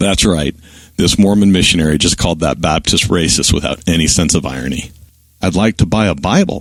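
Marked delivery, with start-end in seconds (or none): 5.4-6.6 put-on meek, humble, innocent-sounding tone. Retelling asking a preacher to buy a Bible: imitating own innocent humble voice. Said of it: "in the most innocent and humble voice".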